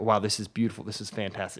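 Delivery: plain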